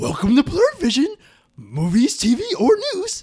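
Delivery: very high-pitched swooping alien voice. Reading a show intro while the others guess the voice, Yoda voice. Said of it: "That's definitely".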